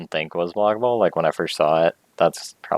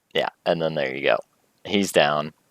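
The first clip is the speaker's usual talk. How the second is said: ordinary talk, nothing marked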